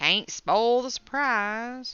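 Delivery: overdone thick Southern twang, high pitch. Repeating a phrase just said, after noticing it sounded too southern: excessively southern sounding. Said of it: "That was excessively southern sounding".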